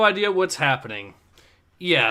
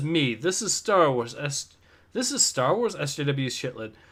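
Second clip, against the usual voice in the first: plain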